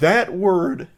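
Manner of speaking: big crack in the voice on word. Reacting to the word she used, with a big voice crack. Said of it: "I had a big voice crack there".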